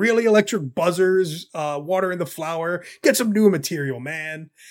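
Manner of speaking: acted, mocking, scornful, jeering taunt. Retelling a cartoon scene, acting out one character mocking another, retelling a mocking taunt. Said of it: "he starts mocking Joker".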